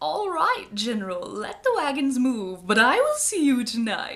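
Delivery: booming, loud voice swooping up and down. Retelling a legend where a voice speaks from the bushes: Bell Witch voice. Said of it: "that's obviously what the Bell Witch sounded like".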